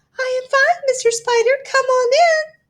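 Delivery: tiny, small, high piping little voice. Reading a story, a voice answers Mister Spider from inside the house: small, high voice. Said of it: "came a small, high voice".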